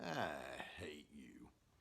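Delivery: low, quiet, throaty, guttural growl. Quoting what he said after turning to face them in the playroom, guttural tone. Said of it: "with this guttural tone of voice".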